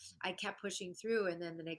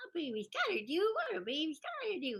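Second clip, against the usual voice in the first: very high, swooping, pitch-swinging little-boy cartoon voice; 11 semitones higher, 4 dB louder than usual. Showing the voice used at a first cartoon audition: Tommy Pickles voice. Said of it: "That was the voice".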